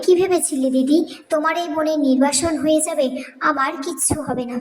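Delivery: ordinary delivery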